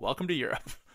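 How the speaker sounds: ordinary delivery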